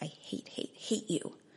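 slow, harsh, hissed whisper. Reading a memoir passage aloud, speaking to Hashem in prayer: harsh whisper. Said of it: "in a harsh whisper".

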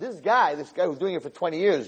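ordinary delivery

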